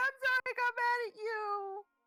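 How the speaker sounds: very high, loud sobbing, words blubbered. Apologizing to someone after getting mad at them, [name] blubbering an apology. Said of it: "[name]'s also blubbering so hard".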